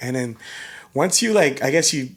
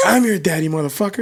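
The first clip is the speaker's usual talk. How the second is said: put-on young kid voice, higher pitch; 5 semitones higher, 4 dB louder than usual. Retelling what a kid said to him in a game, imitating a young kid. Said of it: "they sound like they're fucking eight years old".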